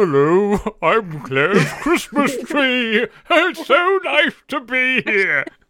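very high, loud, funny piped-up voice. Playing Claire's Christmas tree, greeting the host as a show guest, in a funny voice. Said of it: "That's a funny voice for a lady tree".

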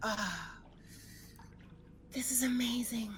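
soft, high, dreamy whispered sigh of relief. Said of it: "And she's like".

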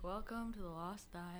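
very quiet, hushed, joyless and unexcited tone. Mimicking how the other speaker opens the lost dial, imitating a dreary, unexcited tone. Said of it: "You sound very dreary. You do. You're like".

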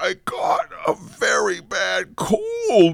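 very high, feeble, weak, croaky, creaky squeak. Reading a story, Fred, who has a bad cold, speaks; squeaky weak voice. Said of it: "squeaked Fred in a weak voice".

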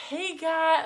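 put-on very high, loud presenter voice. Retelling how they sound when speaking at a mic: imitating own put-on mic voice. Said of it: "You, like, put on a little bit?".

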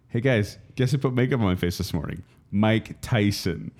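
ordinary delivery

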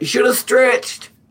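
piercing, shrill, very high, very loud booming yell. Voicing Biko before hiding back into the background: Biko yelling out. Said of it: "he's gonna yell out".

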